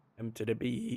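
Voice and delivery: soft voice that breaks mid-phrase. A caster calls the play in a match, voice cracking. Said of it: "that voice crack".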